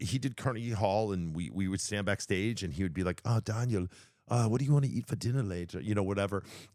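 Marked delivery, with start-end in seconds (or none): 3.2-5.8 clumsy, bad put-on Scottish accent, pitched up. Speaker recalls a fellow performer backstage asking about dinner, bad Scottish accent as Alan. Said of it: "that your Scottish accent?".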